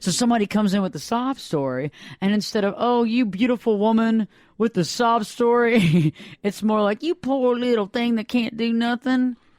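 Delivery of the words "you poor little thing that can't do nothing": put-on Southern US accent, belle style. Describing how people answer someone with a sob story, in a put-on southern accent. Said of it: "That's a good Southern accent there".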